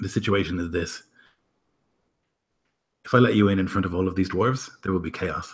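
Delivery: quiet, hushed, confidential tone. Voicing a guard who beckons the party down and speaks: speaking quietly. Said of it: "says to you quietly".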